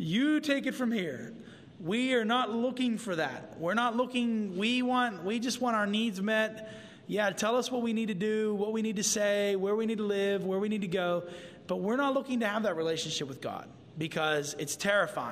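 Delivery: ordinary talk, nothing marked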